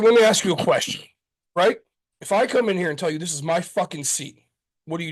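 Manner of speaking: put-on angry outburst, losing temper. Retelling a bar exchange after being teased about beers: imitating himself losing his temper. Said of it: "drunk in me, like, half lost it".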